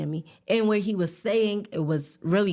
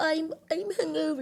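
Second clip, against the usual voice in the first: very high-pitched put-on British accent; 10 semitones higher, 4 dB quieter than usual. Retelling a first date, the speaker quotes her hungover date in a british accent. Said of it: "the British accent".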